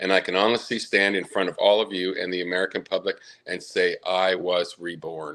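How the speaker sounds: ordinary delivery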